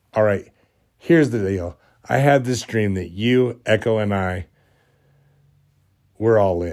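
ordinary delivery

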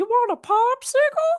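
very high, loud parrot screech voice. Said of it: "hear him in the background screaming".

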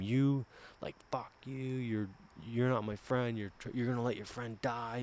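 screaming. Retelling yelling at a friend nose to nose; retelling screaming at him. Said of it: "screaming at him".

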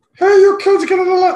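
high, squeaky puppet voice. Recalling a man from school who talked like Beaker: Beaker voice. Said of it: "that's his voice".

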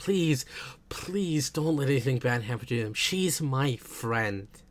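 put-on pleading, begging tone. Recapping a show's scene, speaker acts out a character begging another: imitating someone begging. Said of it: "And he's begging".

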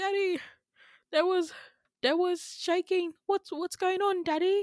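put-on British accent. Retelling going up to their dad in the cockpit after shaking, put-on british accent. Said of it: "That's how I talk to my dad in a British accent".

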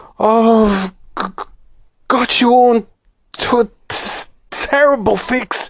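very slow, halting, shaky trembling quaver, breaking up. Moonface, unable to find the hole, speaks to his companions in a trembling voice. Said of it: "he said in a trembling voice".

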